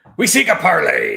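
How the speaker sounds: booming, rough pirate bellow, slow and drawn out. A player speaks in character in their best pirate voice. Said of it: "I say in my best pirate voice".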